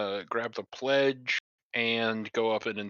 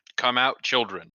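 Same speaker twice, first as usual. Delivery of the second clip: booming, resounding voice, faster; 5 dB louder than usual. Player's character uses magic to call out to children, in a booming voice. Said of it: "use uh thaumaturgy to make a booming voice".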